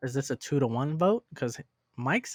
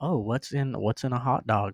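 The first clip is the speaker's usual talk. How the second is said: ordinary delivery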